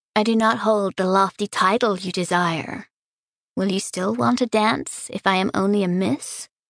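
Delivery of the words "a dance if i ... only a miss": plain reading voice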